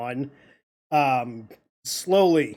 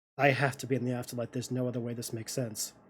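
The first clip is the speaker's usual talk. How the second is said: very soft, hushed, very quiet murmur; 3 semitones lower, 10 dB quieter than usual. Voicing a character who has just woken among strangers: very quiet voice. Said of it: "very quietly".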